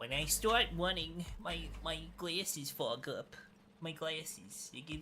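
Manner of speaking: over-the-top New York accent. Speaker tries another accent after failing at others, exaggerated New York accent. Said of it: "I can do super racist like New York".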